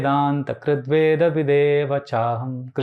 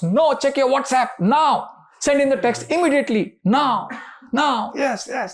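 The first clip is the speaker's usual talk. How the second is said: put-on shrill, very high, rushed, loud barked shouting; 10 semitones higher than usual. The speaker acts out their own mind shouting at them, voicing the mind shouting. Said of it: "The mind shouts".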